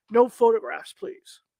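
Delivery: deep, dropped, very low put-on voice. Retelling a woman on the stairs turning around while being filmed: imitating a real deep voice. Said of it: "her voice was real deep".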